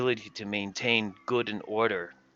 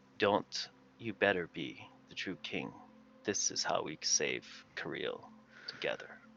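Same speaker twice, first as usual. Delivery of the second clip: close, breathy whisper, in character; 5 semitones lower, 10 dB quieter than usual. Voicing a character who whispers into another's ear during a hug: whispering in character. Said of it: "And I whisper in your ear".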